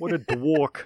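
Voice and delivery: loud Boston accent on dwarf. Joking with a co-host, saying the phrase in a Boston accent. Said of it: "someone from Boston saying dork".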